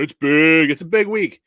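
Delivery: put-on self-important heavy delivery. Welcoming a guest back and hyping the week, in a put-on deep voice. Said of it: "Get that deep voice out".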